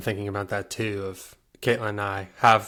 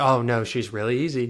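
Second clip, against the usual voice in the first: sarcastic, mocking tone meaning the very opposite; 2 semitones higher than usual. Showing how parents joke about a hard child: sarcastic.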